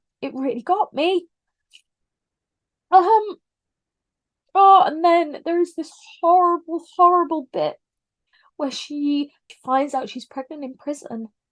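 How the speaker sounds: crying while talking, tear-soaked, voice breaking. Describing a sad scene from a book that makes the speaker cry again: crying while talking. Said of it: "I'm crying again talking about it".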